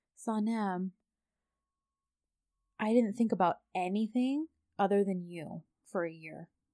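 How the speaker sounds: put-on soft, gentle, sweet voice. Retelling what a man said to his son, imitating a soft, sweet voice. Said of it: "So softly and sweetly".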